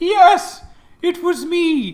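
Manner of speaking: high, loud, booming god voice.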